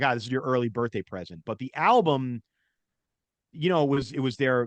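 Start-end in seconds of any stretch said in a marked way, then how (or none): none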